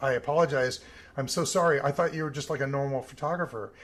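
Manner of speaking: ordinary talk, nothing marked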